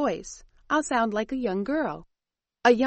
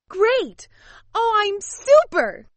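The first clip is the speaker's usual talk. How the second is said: put-on loud, very high-pitched young girl's voice; 10 semitones higher, 6 dB louder than usual. Actor playing a young girl in a radio play answers Kathy; loud young girl voice. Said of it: "A young girl with a loud voice".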